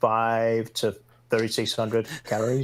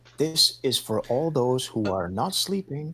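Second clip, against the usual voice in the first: acted whispering. Retelling what an instructor says to the class: imitating a whispering instructor. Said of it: "instructor just whispers".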